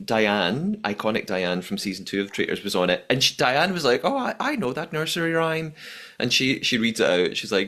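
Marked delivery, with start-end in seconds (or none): 4.0-5.7 put-on Northern Irish accent, pitched up. Quoting Diane from Traitors on an Uncloaked episode, in Diane's Northern Irish accent. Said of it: "That was my Northern Irish accent".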